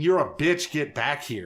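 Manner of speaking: restrained, mild scream. Retelling a game fight where a character chased a fleeing villain: retelling a scream.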